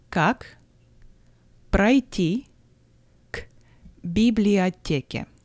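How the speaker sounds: slow, word-by-word Russian with separated words.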